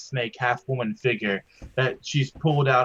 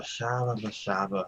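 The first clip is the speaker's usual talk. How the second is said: muttered under breath, much quieter; 2 semitones lower, 8 dB quieter than usual. A player's character mutters while stepping down the stairs, under her breath. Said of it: "Cole says under her breath".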